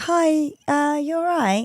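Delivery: acted puzzled, uncertain, slow, high voice. Retelling greeting someone who knew the speaker's name: imitating sounding really confused. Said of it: "really confused".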